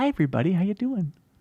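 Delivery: sugary, sweet, friendly voice. Asked whether their very sweet voice is intentional, showing a greeting: very sweet voice. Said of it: "with this very sweet voice".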